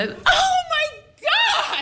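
very high, slow shrieked scream. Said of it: "And I screamed".

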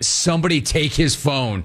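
ordinary delivery

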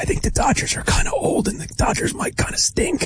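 quiet confidential whisper. Sharing a take that should not become public: whispering. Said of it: "I'm gonna whisper this".

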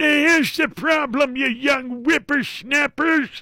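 very high, put-on old grandpa voice. Explaining the problem with using computers, redoing it properly: grandpa voice. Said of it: "You got to throw the grandpa voice in there".

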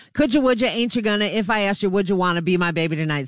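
rushed, rattled off fast, all in one go. Having failed to say the line slowly, now saying it fast. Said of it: "I can say it fast".

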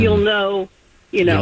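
ordinary delivery

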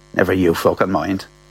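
mutter under breath. The speaker retells Bernie's answer when asked where the money came from: retelling a mutter under breath. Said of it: "Then under her breath".

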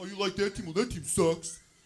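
loud, pushy, obnoxious jeering voice. Acting out an obnoxious loud guy at a bar bothering groups: imitating a loud guy at a bar. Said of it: "some loud guy who seems to be by himself".

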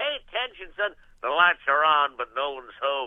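put-on blustery rooster voice with Southern accent. Running through a series of cartoon character voices, in a Foghorn Leghorn voice. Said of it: "I say Foghorn Leghorn".

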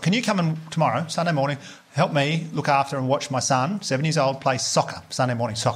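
ordinary delivery

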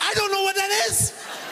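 very high-pitched voice, panicked and confused.

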